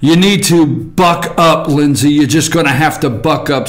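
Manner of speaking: normal talking voice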